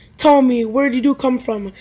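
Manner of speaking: ordinary delivery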